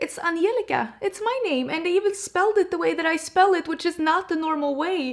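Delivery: voice breaking through tears. Reacting to seeing her name spelled her own way, teary, voice breaking. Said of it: "Oh, I'm tearing up".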